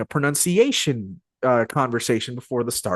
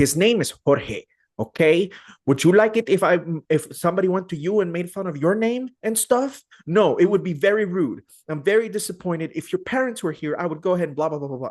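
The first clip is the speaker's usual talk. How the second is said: put-on proud-sounding Spanish accent, pitched higher; 7 semitones higher than usual.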